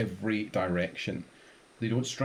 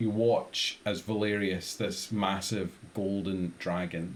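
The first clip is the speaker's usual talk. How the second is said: plain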